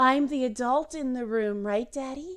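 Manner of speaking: breathy put-on girlish voice. Imitating someone copying another person's speech: breathy Ivanka Trump voice. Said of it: "that breathy voice of".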